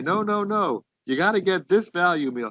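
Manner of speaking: acted high, hectoring yell. Telling of a man at Wendy's lecturing another man, imitating someone yelling. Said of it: "he's yelling at the guy".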